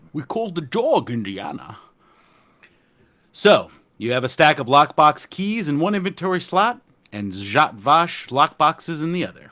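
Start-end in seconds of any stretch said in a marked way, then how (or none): 0.1-1.7 put-on Scottish accent voice. Quoting a movie line as a joke: Sean Connery voice. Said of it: "I was doing, uh, Sean Connery impressions".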